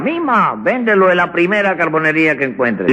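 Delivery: ordinary talk, nothing marked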